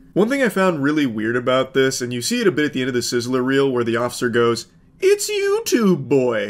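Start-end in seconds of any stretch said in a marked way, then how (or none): 5.0-6.5 cartoon owl voice, high and swooping. Imitating an officer from a video reel, Tootsie Pop owl voice. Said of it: "sounding like the owl from the How Many Licks".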